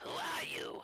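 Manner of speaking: words hissed out in a hissing delivery. Game narrator voices a figure blinded by light from the opened door, hissing. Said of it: "he he kind of hisses".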